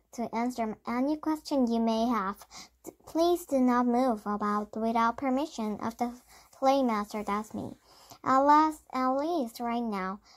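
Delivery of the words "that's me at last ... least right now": plain reading voice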